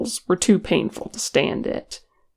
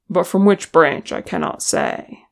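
plain reading voice

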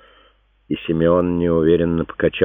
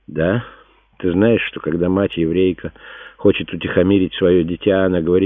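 plain

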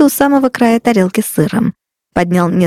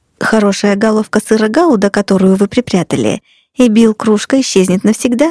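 usual speaking voice

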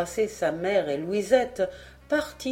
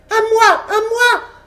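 raging shriek, very high, at full volume; 11 dB louder than usual. The apprentice, seized by the throat and pinned to the floor, cries out: screaming with rage. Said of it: "hurla Francis en se débattant avec rage".

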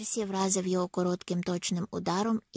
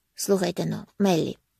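ordinary delivery

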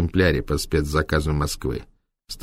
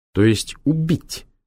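pointedly hard, deliberately harsh, pitched-up delivery; 9 semitones higher than usual. Narrator reading a character's pointed question to the doctor, deliberately harsh. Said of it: "с намеренной жесткостью уточнил Норд".

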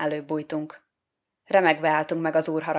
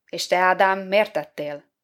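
usual speaking voice

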